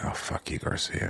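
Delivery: hushed, muttered whisper under the breath. Imagining reacting to a cheerful friend in the morning: muttering under the breath. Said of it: "under my breath".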